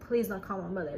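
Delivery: ordinary delivery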